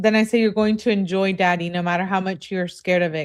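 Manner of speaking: ordinary delivery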